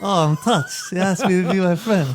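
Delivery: put-on shy coquettish voice. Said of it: "a shy, coquettish girl".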